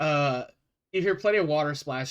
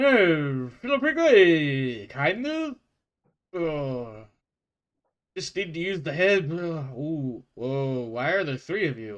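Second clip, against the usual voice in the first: slurred Russian accent with words smeared together. Voicing a character with a Russian accent, slurring all over the place. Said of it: "He's just like slurred all over the place".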